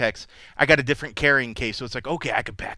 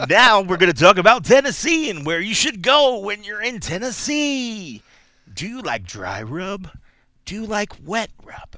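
put-on loud, raised radio announcer voice; 7 semitones higher, 6 dB louder than usual. Joking about starting a barbecue podcast: put-on broadcaster voice. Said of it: "broadcaster voice on point there".

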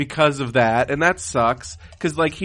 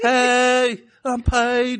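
the word "hey" drawn out in a very high voice; 9 semitones higher than usual. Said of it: "I can't do a Paige impression".

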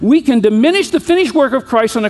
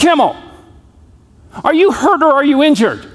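voice called out across a distance; 3 semitones higher than usual. Retelling how the coach called out across the field: imitating a coach yelling. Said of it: "he yelled out and".

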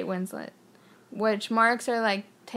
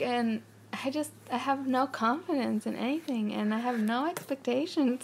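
put-on rambling, run-on speech in a French accent; 3 semitones higher, 3 dB quieter than usual. Imitating a director's interview answer: French accent imitating Michel Gondry. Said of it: "in a French accent".

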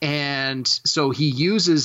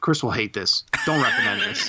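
mock earnest, dead serious, matter-of-fact, animated; 2 semitones lower than usual. Retelling what his wife said with a total straight face: imitating a deadpan delivery. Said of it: "in a total straight face says".

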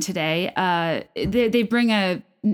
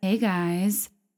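low, soothing put-on blogger voice; 4 dB quieter than usual. Redoing the podcast greeting: lower soothing Kim K voice. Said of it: "a lower register and, like, a more soothing tone like Kim K does".

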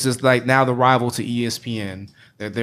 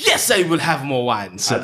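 put-on British accent, slow and sing-song; 2 semitones higher than usual. Teasing another speaker about ordering more wine: British accent. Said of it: "say with a British accent".

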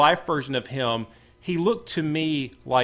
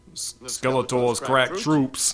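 put-on TV-cop accent. Retelling how he delivered a funny line, old Law and Order guy accent. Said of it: "old Law and Order guy kind of accent".

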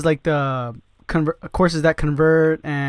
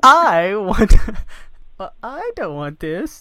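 high, swooping, bratty sing-song voice; 5 semitones higher, 4 dB louder than usual. Teasing the other speaker who wants team members to do the work, in a Willy Wonka blueberry girl voice. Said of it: "You sound like from Willy Wonka, the blueberry girl".

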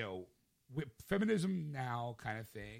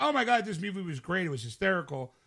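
loud, high, gushing excited rave. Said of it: "the people who are like".

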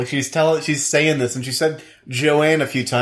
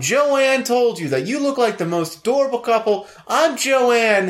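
put-on gushing voice, higher; 8 semitones higher than usual. Retelling what a stranger in the store said to the couple: imitating Joanne. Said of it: "This is actually how she talked".

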